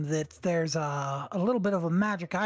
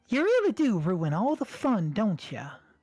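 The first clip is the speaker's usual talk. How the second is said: blended two-voice mix, high and swooping; 5 semitones higher than usual. Voicing a character, accidentally mixing two character voices. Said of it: "that was a mix of both voices".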